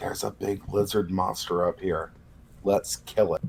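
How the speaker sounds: hushed half-whisper with barely any voice. In a tabletop game, a character half-whispers a message into a ring: half-whispering. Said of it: "I'm going to whisper into it".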